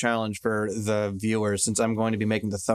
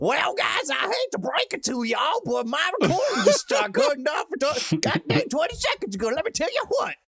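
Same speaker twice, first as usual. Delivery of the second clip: exaggerated, swooping hillbilly Southern US accent. Telling the guys his recording cut off, exaggerated Southern US accent. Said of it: "the the deep south hillbilly fucking bluegrass".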